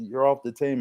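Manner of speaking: ordinary talk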